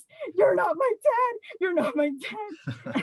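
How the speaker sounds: put-on child screaming at full volume, high and shrill. Retelling a beach story, the speaker's brother screaming at a lifeguard: imitating his screaming. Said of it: "starts screaming at the top of his lungs".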